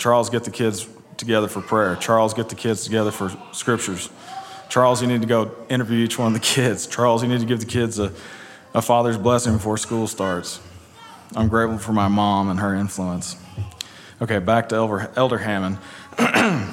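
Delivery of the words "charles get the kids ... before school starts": ordinary talk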